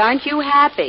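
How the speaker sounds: insistent, happy pressed with falling tune. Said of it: "Blackie, I said".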